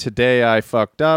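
ordinary talk

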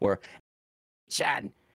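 breathy, whispered cartoon critter voice. Reading movie news aloud to a co-host, breaking into a Minion voice. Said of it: "That was my impression of a minion".

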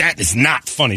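mad, scolding, angry woman's voice. Retelling a woman reacting to a joke while her husband laughs: imitating a mad woman. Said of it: "She was mad at both of us".

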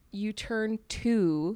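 speaking very slowly, stretched.

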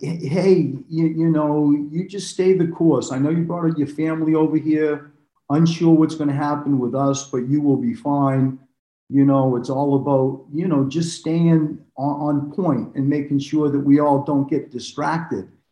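usual speaking voice

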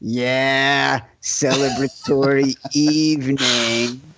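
suggestive, insinuating tone with drawn-out "yeah". Imitating the other speaker's hinting tone about a celebratory evening: imitating a suggestive tone. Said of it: "what you were trying to get at with the tone in your voice".

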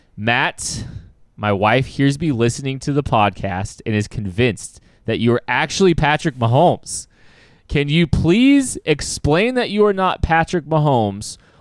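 plain

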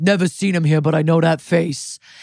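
put-on heavy, thick New York accent, bouncer-style voice. Retelling a story, the speaker quotes a bar bouncer, thick New York accent. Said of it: "the bouncer's got like a thick New York accent".

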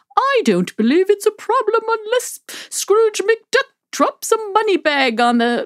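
very high, plummy, posh, odd-sounding voice. Describing candidates who never ran for office, quoting them in a put-on voice. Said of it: "I didn't know you were going to do a voice".

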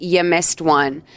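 acted, mean-spirited, snotty, snide, nasty tone. Retelling a film scene where a character speaks to him: imitating a nasty tone. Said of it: "she says to him in a really shitty way".

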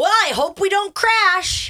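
very high, dead-serious, loud near-shout. Retelling a child's remark while boarding a plane: imitating a serious, very loud child. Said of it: "It just sounds like he's yelling".

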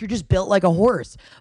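plain

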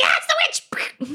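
shouting in character voice. Casting a spell and shouting to companions in character: in-character shout. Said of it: "Can I shout to my compatriots and be like".

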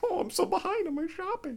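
very high, fretful, frazzled, whiny voice. Asking another speaker about holiday shopping, doing an impression of a behind-schedule shopper. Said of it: "a very flattering impression you've done of me".

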